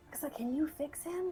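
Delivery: speaking in a whisper. Asking quietly whether someone can fix him: whispering. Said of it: "He whispers".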